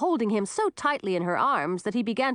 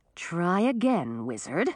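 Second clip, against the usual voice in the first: ordinary delivery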